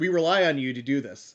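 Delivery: put-on flat emotionless voice. Retelling a scene where T'Pol addresses Hoshi, imitating T'Pol's deadpan. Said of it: "very deadpan with like no, no emotion like Vulcans do".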